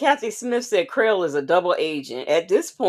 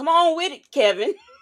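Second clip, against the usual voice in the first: very high-pitched put-on voice; 9 semitones higher than usual. Reading out what Miss Mad About Music said, repeat it in a Nesto voice. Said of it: "in my Nesto voice".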